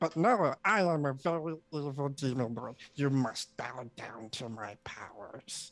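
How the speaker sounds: cute, tiny put-on evil demon voice. Describing a tiny cube-shaped demon lord, the speaker voices it as a tiny demon lord. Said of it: "it talks like this".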